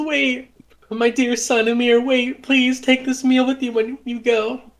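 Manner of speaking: tearful, crying, very high-pitched voice. Voicing a mother who rushes out after her son: crying. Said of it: "Penelope comes rushing out, crying".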